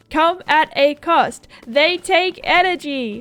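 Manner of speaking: loud, emphatic yelling. Speaker warning about horses overjumping obstacles, yelling. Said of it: "Sorry for yelling".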